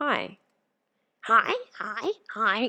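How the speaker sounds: squawky, swooping parrot voice. Streaming on Twitch beside a bird, showing off a parrot voice. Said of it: "here's my parrot voice".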